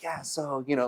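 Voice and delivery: put-on small whisper. Retelling how a woman met over coffee spoke about cannabis: imitating her little whisper. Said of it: "like a little whisper".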